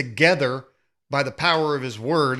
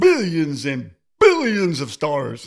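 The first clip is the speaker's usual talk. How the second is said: sing-song narrator voice, pitch swooping through every word. After the Big Bang comes up, speaker offers his Carl Sagan impression. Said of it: "I'm going to give you my Carl Sagan impression".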